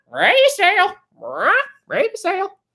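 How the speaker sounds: very high, squawking, swooping parrot voice. Playing Sea of Thieves, showing the audience a parrot impression. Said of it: "How's my parrot imitation?".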